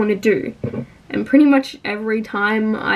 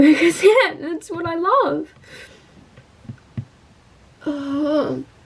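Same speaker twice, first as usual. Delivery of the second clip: crying, tearful while talking; 6 semitones higher than usual. Speaker about to start chemo talks about what she loves, crying while talking. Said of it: "that shouldn't be what I'm crying over".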